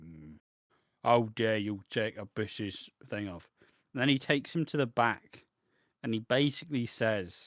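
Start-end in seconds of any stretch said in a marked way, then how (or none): 0.0-3.5 disapproving, disappointed, stern scolding tone. Retelling a wrestling segment, imitating Hulk Hogan frowning. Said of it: "Hogan comes out with a frowny face on".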